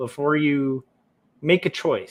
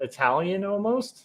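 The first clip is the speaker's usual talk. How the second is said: usual speaking voice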